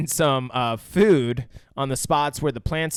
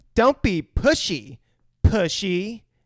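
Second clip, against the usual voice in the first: put-on play-acted very slow, high, drawn-out sassy kid voice; 7 semitones higher than usual. Retelling a favourite film line: imitating Drew's sassy line. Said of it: "that girl's got some fucking sass".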